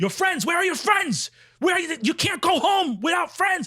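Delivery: very high-pitched, insistent shouting. Retelling how a clinic worker yelled after the surgery: imitating someone yelling. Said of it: "this guy is yelling at me".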